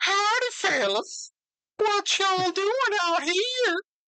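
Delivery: put-on, laid-on-thick southern belle drawl. Imagining how Jenna would talk at the end: Jenna as a Southern belle. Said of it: "southern belle. She's like".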